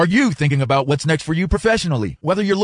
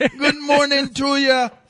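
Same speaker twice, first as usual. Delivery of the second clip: put-on parrot voice with Jamaican accent, higher pitch; 11 semitones higher than usual. Retelling what a parrot said every morning, imitating a parrot with a Jamaican accent. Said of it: "Did he have a Jamaican accent?".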